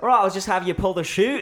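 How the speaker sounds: put-on very high, loud Australian accent. Retelling what the skydiving tandem guy said: imitating Sam's Australian accent. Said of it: "so Australian".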